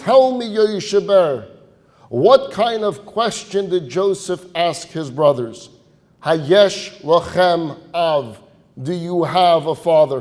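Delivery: put-on booming voice. Retelling a teacher challenging an eight-year-old student: imitating a booming voice. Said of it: "in a booming voice, he challenges him".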